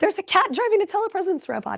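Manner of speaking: high startled cry of alarm. Retelling how a startled person reacted to the robot: imitating someone screaming. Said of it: "they screamed".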